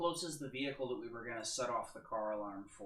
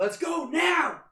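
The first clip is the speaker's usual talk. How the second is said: very loud, high-pitched bellowing yell; 15 dB louder than usual. Calling upstairs to the others to leave: yelling. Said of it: "I yell upstairs".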